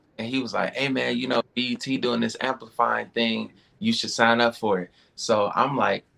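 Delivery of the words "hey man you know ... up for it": normal talking voice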